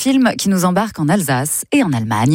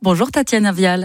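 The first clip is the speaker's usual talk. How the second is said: ordinary talk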